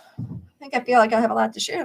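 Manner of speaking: fast, rushed talking. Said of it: "Let me slow down a second".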